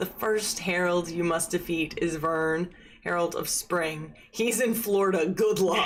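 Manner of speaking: plain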